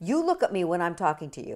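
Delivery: loud, bossy, commanding tone. Showing how a phrasing comes across as an order, commanding, demanding tone. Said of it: "It sounds like a command. Like it sounds like a demand".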